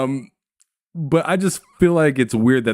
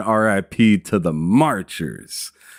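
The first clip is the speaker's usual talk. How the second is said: ordinary delivery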